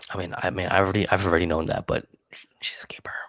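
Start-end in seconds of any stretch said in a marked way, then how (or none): 1.9-3.1 soft, hushed, whispered aside in confiding tone. Telling another speaker about a girlfriend: whispering. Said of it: "Why are you whispering that?".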